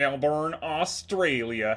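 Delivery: put-on Southern US accent, for fun. Gamer announcing the race location: put-on southern accent. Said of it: "I say with a southern accent".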